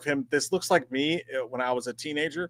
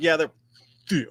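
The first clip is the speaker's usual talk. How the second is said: put-on little girl voice, thick said her own way; 3 semitones higher than usual. Retelling how a nine-year-old says the word thick: imitating Ellie saying thick. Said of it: "She's like".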